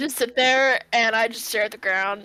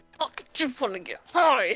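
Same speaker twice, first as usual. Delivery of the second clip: put-on huffy, furious child voice, tantrum-like; 2 semitones higher than usual. Playing a character who storms off angry: huffy child throwing a tantrum. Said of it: "I'm being like a little huffy child".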